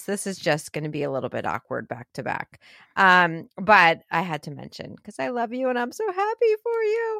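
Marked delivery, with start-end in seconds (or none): 5.0-7.2 very high put-on voice rising to the end. Speaking to a friend after switching topics, high-pitched voice. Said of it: "I did that high-pitched voice for you".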